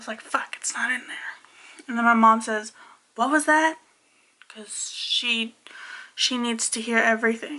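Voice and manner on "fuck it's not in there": muttered, quieter and slower. Retelling the curse said on reaching the empty box, muttering under breath. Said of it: "I like muttered it under my breath".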